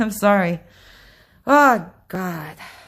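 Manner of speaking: heaving, heavy breathing. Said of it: "I'm actually, like, heaving".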